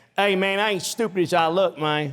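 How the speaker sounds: put-on American guy voice, high, slow, drawn out. Joking that someone got canceled for American impersonations: imitating an American guy. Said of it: "He did American impersonations of guys".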